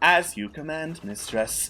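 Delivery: soft, mechanical, robotic machine voice. Narrating a story, a robot answers its mistress's command, robotic voice. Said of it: "you hear a robotic voice come on".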